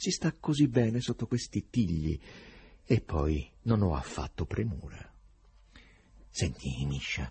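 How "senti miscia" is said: very low, hushed, confiding half-whisper. The poet pulls Berlioz aside, away from the stranger; half-whispered. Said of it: "sussurrò il poeta".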